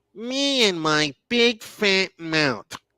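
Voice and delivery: very slow, drawn-out, high cartoon character voice. Speaker uses one of their favorite cartoon voices: put-on cartoon voice. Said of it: "Let me use one of my favorite cartoon voices".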